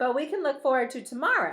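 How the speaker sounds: ordinary delivery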